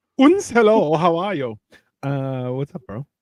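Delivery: put-on German accent. Greeting everyone after being introduced as the first guest: put-on German accent. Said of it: "You put a German accent in Canada".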